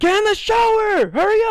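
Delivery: very high-pitched, shrill, angry screaming. Retelling how a group kept screaming at a self-conscious guy: retelling a scream. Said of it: "they kept screaming at him".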